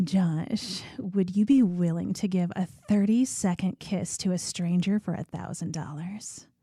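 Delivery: seductive, sultry put-on voice. Reading a spicy question to Josh in a put-on sultry porn voice. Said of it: "let me read this in my porn voice".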